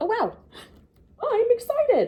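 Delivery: very high, swooping, overexcited gush. Leading a lesson, voicing a character who feels excited: excited. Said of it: "Totally different feeling going on with her".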